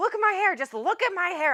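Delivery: thrilled, excited, very high, swooping gush. Retelling how he showed off his hair: imitating someone excited. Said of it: "He was so excited about it".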